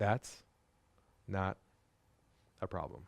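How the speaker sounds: dropped voice, very low and very quiet. Role-playing the reply when someone says they use another vendor: lowered voice. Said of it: "Lower your voice, lower your tone".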